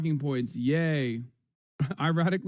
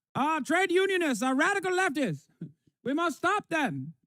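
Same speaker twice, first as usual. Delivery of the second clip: very high, posh, put-on transatlantic accent; 13 semitones higher than usual. Mocking people who call unions radical leftism: mocking transatlantic accent. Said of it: "people are talking in a transatlantic accent in here".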